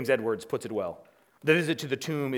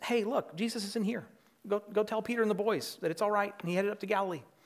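positive, upbeat, friendly tone, pitched up; 8 semitones higher than usual. Imagining the young man's words about Jesus: playing it positive and friendly. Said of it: "I think we assume this is rather positive".

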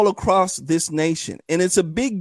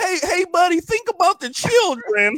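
very high-pitched, put-on pleading beg; 11 semitones higher than usual. Answering a request to start begging: mock begging. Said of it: "Start begging".

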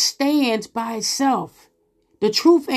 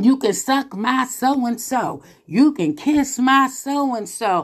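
normal talking voice

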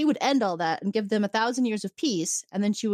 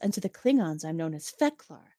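low, very smooth, silken voice; 4 semitones lower than usual. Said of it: "this very silky voice".

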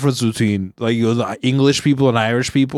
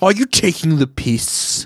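put-on English accent; 3 semitones higher than usual. Joking about talking like people in England: mock English accent. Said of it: "you kinda wanna mimic them".

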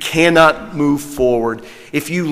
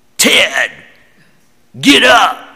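foul, mean-spirited, angry yell; 4 semitones higher than usual. Recalling how she yelled for the speaker's father to wake up, retelling an angry yell. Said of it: "She'd yell".

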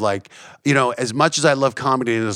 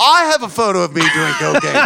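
bad put-on Australian accent, higher and louder; 5 semitones higher, 5 dB louder than usual. Retelling a comedian's stand-up bit: awful Australian accent as Jim Jefferies. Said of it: "my awful Australian accent for doing Jim's bit".

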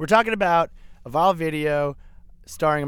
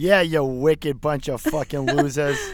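broad Boston accent, laid on very thick. Podcast cold open before the hosts introduce themselves: extremely strong boston accent. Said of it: "said in an extremely strong Boston accent".

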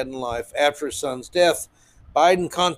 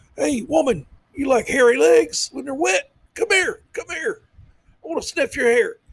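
very high, laid-on-thick put-on voice; 11 semitones higher than usual. Joking after the quote, continuing the Joe Biden impersonation. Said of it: "Biden impersonation".

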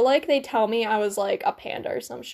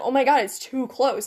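pretend sobbing fright. Imagining a spider nearby, acting out their own reaction: mock crying panic. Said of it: "just cry because it's in the same proximity".

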